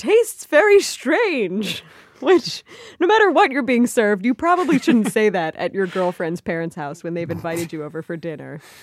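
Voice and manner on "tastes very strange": high, squeaky voice jumping up in pitch. Retelling a guy's reaction at his girlfriend's parents' dinner, imitating a high-pitched voice. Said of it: "makes a high-pitched noise and says".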